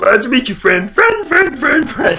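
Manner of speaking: high, loud creature voice. Reading a game's dialogue aloud: Wigglytuff voice. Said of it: "I love doing Wigglytuff's voice".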